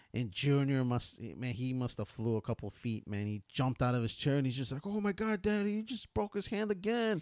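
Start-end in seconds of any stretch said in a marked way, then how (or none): 4.8-7.2 put-on excitement, much higher pitch. Retelling watching a match with Junior, imitating Junior's excitement. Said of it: "And he was like all excited".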